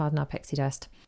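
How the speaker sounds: ordinary delivery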